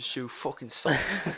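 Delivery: put-on British accent. Imitating an actor quitting the show: put-on British accent. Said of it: "he's British, so he's like".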